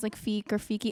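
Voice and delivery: ordinary talk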